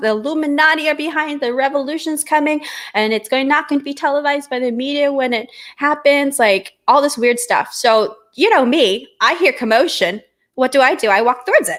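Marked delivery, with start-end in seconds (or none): 0.0-6.4 high, full-volume screaming rant like a street crier. Retelling what a man in the street screamed: imitating a man screaming at full volume. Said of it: "He's screaming at the top of his lungs".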